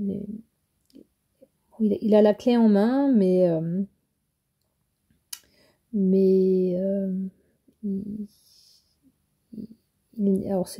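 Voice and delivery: stammering, hesitant speech. Reading the Hanged Man card, the speaker stumbles over her words, stammering, hesitant. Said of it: "je bafouille un peu".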